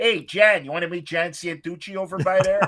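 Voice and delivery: put-on old-school, classic Chicago accent. Imitating a buddy asking about a guy at the table: classic Chicago accent. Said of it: "wait, do that again".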